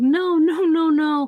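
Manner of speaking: mock, very slow, high, drawn-out, tearful crying. Retelling a story where a woman smells the gasoline; imitating someone crying. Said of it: "she's crying, she's like".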